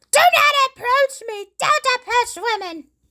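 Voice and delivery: very high, top-of-the-lungs screaming outburst. Retelling a woman screaming at a man nearby: imitating a woman screaming. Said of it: "This woman was just screaming at the dude".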